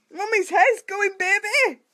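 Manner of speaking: high, teary laughing through tears.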